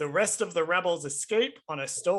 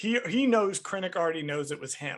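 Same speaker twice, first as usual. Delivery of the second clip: plain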